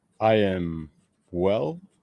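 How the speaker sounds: put-on horror-film vampire voice. Answering a greeting from the host, sounding like Lugosi. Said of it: "you sounded like Lugosi there".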